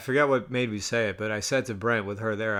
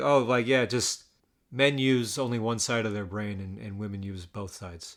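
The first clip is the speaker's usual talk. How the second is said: plain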